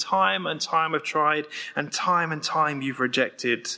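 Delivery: plain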